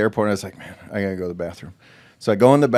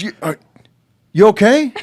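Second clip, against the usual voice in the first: very high, raised, frantic and worried voice; 11 semitones higher, 6 dB louder than usual. Retelling a friend rushing into the airport bathroom: imitating Mike's frantic call. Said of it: "I hear Mike frantic".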